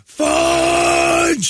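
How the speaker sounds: mock scream at top of lungs, very high, shrill. Retelling walking toward a kid in the road after an accident: retelling a scream. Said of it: "at the top of my lungs over and over".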